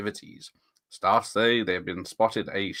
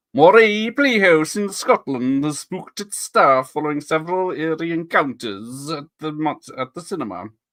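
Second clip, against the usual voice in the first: affected Scottish accent throughout, pitched up and loud; 6 semitones higher, 5 dB louder than usual. Reading a true news story set in Scotland, put-on Scottish accent. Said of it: "I will affect a Scottish accent".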